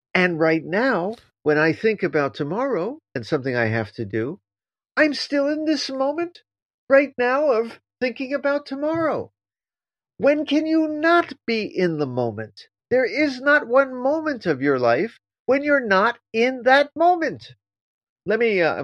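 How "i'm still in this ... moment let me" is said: growing upset as it goes, pitched high. Explaining an idea to a listener, the speaker is getting upset. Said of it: "I'm getting upset here give me a moment".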